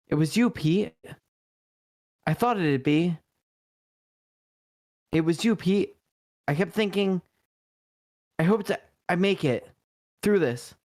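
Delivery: intoxicated speech. Reading lines aloud out of order while really drunk. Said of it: "Sorry, I'm really drunk".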